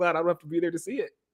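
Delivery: tongue-in-cheek sarcastic delivery. Retelling Pedro Pascal's reply about the dark season: imitating Pedro Pascal's sarcasm. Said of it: "It just sarcastically says that".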